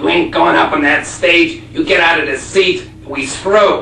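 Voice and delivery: barking Buffalo, New York accent.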